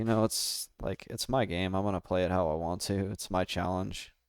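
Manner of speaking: ordinary talk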